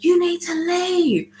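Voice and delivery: very high voice trembling with fury. Retelling a confrontation with a lady while on the phone, imitating a shaking angry woman. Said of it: "she's like shaking".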